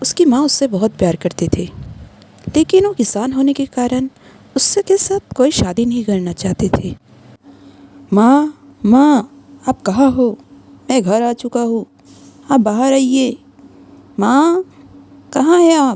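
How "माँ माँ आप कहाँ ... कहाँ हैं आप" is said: loud, calling shout. A son comes home and calls for his mother: shouting for his mother. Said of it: "इतना चिल्ला क्यों रहा है?".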